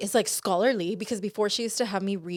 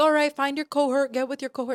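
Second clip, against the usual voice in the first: mock prim, proper teacher voice, higher; 5 semitones higher than usual. Retelling a college english teacher's instructions to the class: imitating a proper teacher. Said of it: "a very proper teacher".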